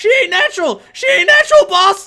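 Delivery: very high, very loud, rushed, frantic panicked shriek. Voicing a naked clown running to the boss: screeching in panic. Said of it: "he just screeches".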